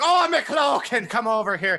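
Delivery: put-on generic stock Irish accent. Recalling how a running joke started, the speaker quotes another person in a generic irish accent. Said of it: "really really generic Irish accents".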